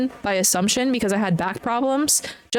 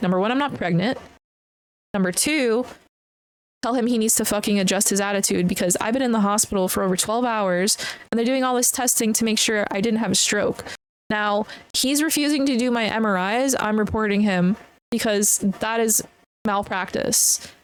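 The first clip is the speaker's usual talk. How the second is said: ordinary delivery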